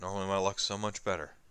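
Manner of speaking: dry, deadpan, sarcastic understatement. Narrator voicing a character's line during a game session, sarcastic. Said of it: "he says it sarcastically".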